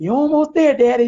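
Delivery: put-on cheerleader pep. Retelling cheering on a dad in the hospital: imitating own cheerleading. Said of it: "I'm doing a little cheerleader".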